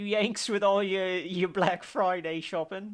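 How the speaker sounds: bad, fake, put-on British accent. Joking to the other host about Americans: terrible British accent. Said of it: "my terrible version of a British accent".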